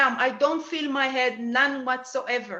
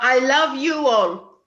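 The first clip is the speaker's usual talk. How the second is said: put-on heavy, thick, very strong French accent; 8 dB louder than usual. Passing on a message from the mother, the speaker says it in a strong French accent. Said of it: "in a very strong French accent".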